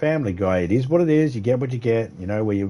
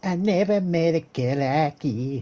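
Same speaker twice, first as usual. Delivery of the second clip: squeaky, high-pitched character voice, drawn out; 4 semitones higher than usual. Quoting a TV show principal's line, in a high squeaky voice. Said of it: "in a high squeaky voice".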